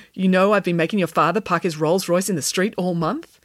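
plain

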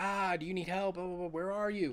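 put-on screaming, calling out. Retelling a movie scene where a hero calls into a building: imitating someone screaming for help.

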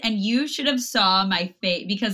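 normal talking voice

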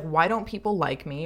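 ordinary delivery

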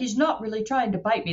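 put-on horrible, clumsy Australian accent. Imitating the crocodile hunter Steve Irwin holding a crocodile: horrible Australian accent. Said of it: "That's my horrible Australian accent".

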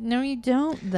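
ordinary talk

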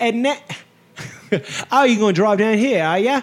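affected fake British accent. Mocking someone who comes back from abroad talking differently, in an affected accent. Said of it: "say things like this".

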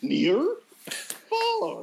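animated puppet monster voice, pitch swinging all over. Asked to do Ernie and Bert, the speaker then does a Grover voice. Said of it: "And then I do Grover".

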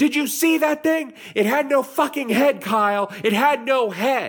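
very high, loud, all-out shrieking, acted. Retelling how a friend screamed at another friend after seeing a headless figure: imitating a friend screaming. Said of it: "Eric is screaming at Kyle".

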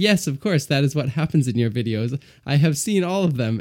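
plain reading voice

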